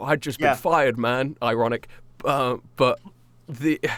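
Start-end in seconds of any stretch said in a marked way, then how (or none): 0.0-1.4 sad, defeated, downcast, dejected voice. Voicing a sad firefighter walking dejected: dejected sad firefighter. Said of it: "walking dejected, and you ask him".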